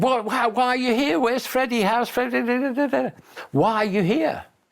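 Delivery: acted, very high shouting like a crowd. Retelling how they all shouted as he got out of the car: imitating people shouting. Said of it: "they're all shouting".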